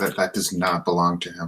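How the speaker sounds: whispering. In a role-play, a character pulls another aside, whispering. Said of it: "and I whisper to Cicely".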